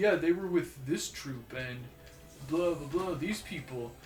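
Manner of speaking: ordinary delivery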